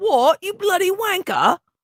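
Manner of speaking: heavy British accent, laid on. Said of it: "a really thick British accent".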